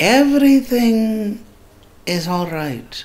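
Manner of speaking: very high, unhurried, drawn-out guru voice. Imitating what a man started saying, in a high voice. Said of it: "like in this high voice".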